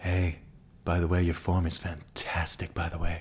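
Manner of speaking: soft, hushed, close-to-the-ear murmur. Retelling what a drag queen said during yoga: imitating Queen Bayard's soft half-whisper. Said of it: "a really soft whisper in my ear going".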